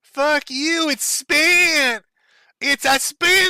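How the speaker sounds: very high, very slow odd cartoon voice, spent stretched out. Acting out a man refusing to refund money, in a weird twenty-year-old Cartman voice. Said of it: "like a weird twenty-year-old Cartman".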